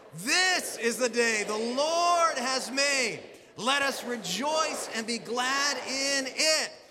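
eager, enthusiastic, very slow and drawn out. Leading the congregation in a second, livelier reading: with more enthusiasm. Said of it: "let's read this with more enthusiasm".

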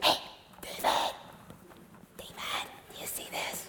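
very quiet, hushed, barely voiced whisper. Retelling men in a cave calling to David: imitating men whispering. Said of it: "I think they had to whisper this".

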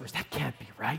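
very quiet, hushed, tempting whisper. Acting out the tempter twisting God's words: whispering as the tempter. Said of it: "and then he whispers".

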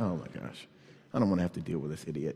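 very low, very quiet, rushed, condescending, dismissive mutter. Retelling how a construction guy reacted to them at his window, mock-condescending. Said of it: "He's kind of condescending".

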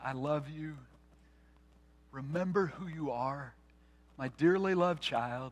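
imitated whisper.

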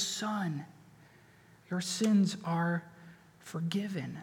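gentle, soft, tender words, very slow. The speaker quotes Jesus's words to the paralytic, retelling tender words. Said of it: "look at the tenderness again in his voice".

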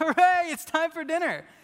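gleeful, shrill, loud, high excited cheer. Retelling how his son cheers when dinner is announced: imitating his son cheering excitedly. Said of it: "pumping his fist and saying".

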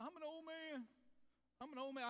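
high, whiny, complaining voice. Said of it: "Will you quit whining?".

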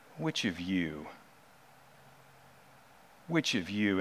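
put-on corrective, rebuking tone. Acting out a rebuke to the Pharisees who set up a trap: voicing Jesus in a put-on corrective tone. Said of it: "in a corrective tone".

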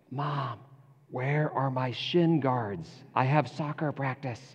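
soft half-whisper with no voice at all. Retelling a son waking his napping mom, imitating a half-whisper. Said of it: "in a whispered voice says".

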